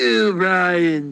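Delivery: put-on high, loud cartoon-baby voice. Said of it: "my Stewie Griffin impression".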